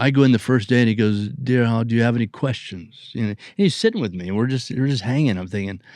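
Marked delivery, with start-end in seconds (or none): 1.3-3.1 badly done put-on English accent. Recalling his first day, speaker quotes an actor in a bad english accent. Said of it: "It's a bad English accent".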